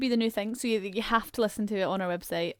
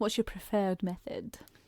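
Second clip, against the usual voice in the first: put-on elderly English professor voice; 2 semitones lower, 6 dB quieter than usual. Co-host asking listeners their preferred way to listen, Dumbledore impression. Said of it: "You said that like an old English professor".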